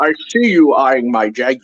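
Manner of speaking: British accent on a word. Joking with co-hosts that jaguar is more fun said this way: british accent. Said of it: "say Jaguar in a British accent".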